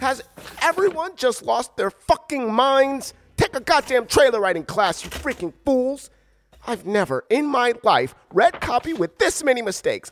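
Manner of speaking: very high-pitched, enraged, furious outburst. A voice-over reader rants during a botched trailer recording, angry. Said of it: "I'm so angry right now".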